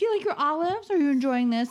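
put-on, fast, cheery, chipper chatter. Speaker retells trying to get companions to talk while out, mock-chipper. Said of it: "I'm just trying to be chipper".

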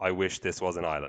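ordinary talk, nothing marked

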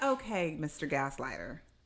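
plain

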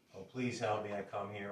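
normal talking voice

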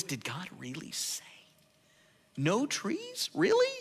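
play-acted, high, swooping, sceptical, disbelieving tone. Retelling how he questions Eve about what God said: mock-incredulous. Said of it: "you hear the incredulity in the voice".

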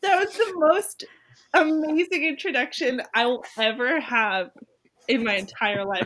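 high voice, laughing through the words. Reacting to a glowing introduction on the podcast, laughing while talking. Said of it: "I'm, like, cry laughing right now".

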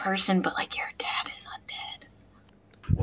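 very quiet, very slow, hushed whisper. Breaking news to another player they don't want to give: whispering. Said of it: "Why'd you whisper it?".

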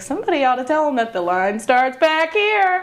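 quick, joking aside. Retelling what they said to the lady next to them in line: retelling a joking remark. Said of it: "I jokingly said".

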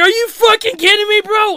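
super excited disbelief.

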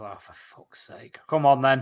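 muttered under the breath. In a tabletop game, Varys reacts as Meatbone goes through: muttered under his breath. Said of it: "Varys just under his breath goes".

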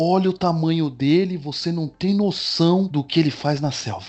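put-on hushed wildlife presenter voice. Imitating a presenter showing a dangerous animal: lowered voice imitating Richard Rasmussen. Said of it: "ele abaixa a voz".

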